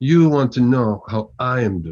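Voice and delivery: put-on heavy, thick Russian accent, laid on thick. Retelling how Anatoly answered his greeting at the mirror, Anatoly's thick Russian accent. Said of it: "In a thick Russian accent".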